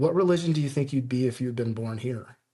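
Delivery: put-on, very broken English. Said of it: "he says in very broken English".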